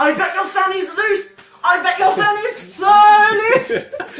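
imitated yelling. Retelling what someone yelled at a teacher on a school trip: imitating someone yelling. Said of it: "someone yelled at my teacher".

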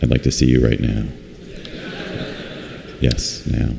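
low, hushed, whispered menace. Showing how to be terrifying without shouting: low, threatening voice. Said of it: "a nice, low, threatening voice".

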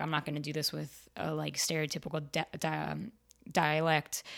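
ordinary talk, nothing marked

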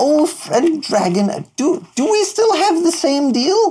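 put-on very high little kid voice, called out loudly. Playing a character calling to the others from near the stairs, in a child's voice. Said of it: "as good of a child's voice as he can muster".

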